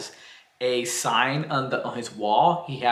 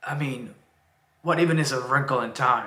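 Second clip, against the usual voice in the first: put-on gruff footballer voice. Reading a TV show's lines aloud: Roy Kent impression. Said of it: "best, uh, Roy Kent impression for you".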